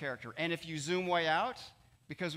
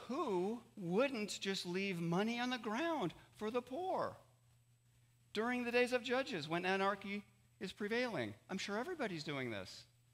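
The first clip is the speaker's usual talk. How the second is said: tongue-in-cheek, sarcastic tone; 4 semitones higher, 5 dB quieter than usual. Explaining Old Testament gleaning law to listeners: sarcastic.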